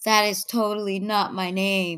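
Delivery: plain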